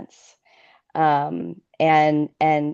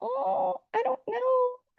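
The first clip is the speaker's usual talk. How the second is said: very high, soft, tiny little voice. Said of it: "little voice".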